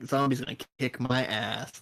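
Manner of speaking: ordinary talk, nothing marked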